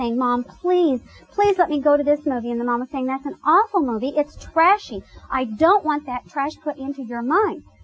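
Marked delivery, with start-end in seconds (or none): 0.2-2.5 mock pleading tone. Retelling a daughter fixing salad and begging her mother, imitating a daughter pleading. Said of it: "just pleading".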